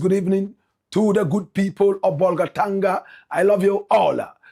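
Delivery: plain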